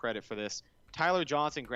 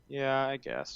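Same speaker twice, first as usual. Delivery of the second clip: glum, dejected, deflated tone. Answering a question about the quarterback's numbers, sounding down. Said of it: "You sound down".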